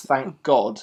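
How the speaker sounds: normal talking voice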